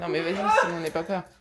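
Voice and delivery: loud, fast, laughing, insistent delivery.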